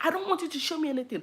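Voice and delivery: put-on terrified scream, very high pitched. Recalling a man chasing her as a child, retelling a terrified scream. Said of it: "I was screaming".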